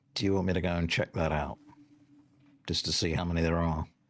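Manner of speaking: whispering in character. Voicing a character who offers to scout ahead: whispering in character. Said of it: "Niathana whispers".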